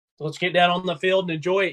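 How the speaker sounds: plain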